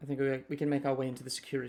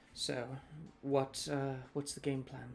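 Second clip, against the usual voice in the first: voice dropped a little, quiet and lowered; 6 dB quieter than usual. Retelling what a woman said as others passed, lowered voice. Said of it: "she lowers her voice a little bit".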